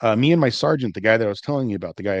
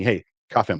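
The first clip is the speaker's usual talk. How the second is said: put-on, emphatic, forceful exclaimed delivery. Retelling a sergeant's order to cuff someone: imitating an exclaimed order. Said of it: "but exclaims to me".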